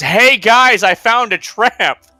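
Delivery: put-on shouting. Retelling how a party member warned the others: retelling a shout. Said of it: "And he shouts".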